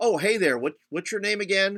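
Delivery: play-acted snide, faux-friendly tone. Speaker acts out a remark once made just to be snarky, mock-snarky greeting. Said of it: "just to be snarky or sarcastic".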